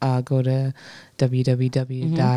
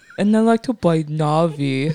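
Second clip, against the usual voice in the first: very slow, drawn-out voice, one word stretched long; 3 semitones higher, 3 dB louder than usual. Doing the voice of the cat Walter: Walter voice. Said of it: "he sounded like that".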